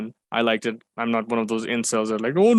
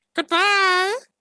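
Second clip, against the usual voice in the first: very high, put-on character voice, pitched way up. Saying goodbye as promised: Orko voice goodbye. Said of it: "I'll do a goodbye as Orko".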